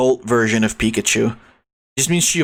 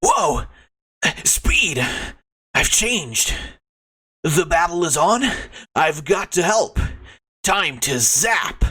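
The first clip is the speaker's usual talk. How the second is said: put-on cartoon character voice, slow and drawn-out; 4 semitones higher than usual. Narrating Sonichu waking up to battle, do Sonichu's character voice. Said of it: "That voice is gonna fucking kill me".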